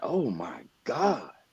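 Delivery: acted, blurted, kinda loud, high exclamation. Retelling a DoorDash guy coming out of the restroom: imitating a loud exclamation. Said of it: "he kinda loud in front of everybody".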